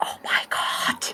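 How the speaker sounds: thrilled, excited whisper, hushed and barely audible. Imitating attendants looking at the sketches: imitating an excited whisper. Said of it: "start whispering with just so, so much excitement".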